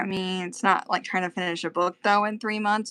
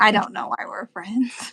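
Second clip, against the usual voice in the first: thoroughly disgusted, fed-up tone; 2 semitones higher than usual. Responding to a friend's joke drawing of a spring: utter disgust. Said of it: "the utter disgust in your voice".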